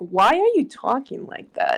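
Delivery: grossed-out, disgusted, breathy whisper. Acting out a reaction to someone talking differently, mock-disgusted voice. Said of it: "disgusted voice".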